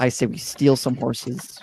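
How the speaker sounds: hushed, leaning-in whispered aside. During a game, leaning over to a fellow player, whispering. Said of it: "I'm gonna whisper".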